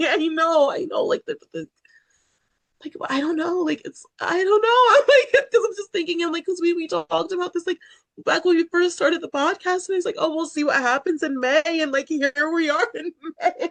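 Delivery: very high, loud, crying, tearful rambling. Talking on a podcast, crying while talking. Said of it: "I'm gonna tell my director you cried".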